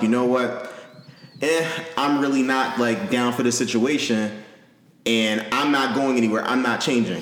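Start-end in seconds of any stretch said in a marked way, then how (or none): none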